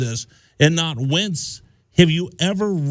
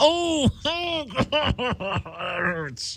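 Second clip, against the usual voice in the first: high, drawn-out pained groan; 6 semitones higher, 6 dB quieter than usual. Imitating the other speaker getting hit: imitating someone in pain. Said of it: "That's what you sound like".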